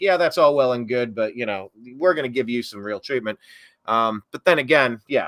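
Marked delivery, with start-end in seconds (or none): 0.0-3.4 offhand, dismissive, mocking tone. Retelling the judge's words: imitating a dismissive mocking tone. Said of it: "her dismissive kinda mocking tone of like".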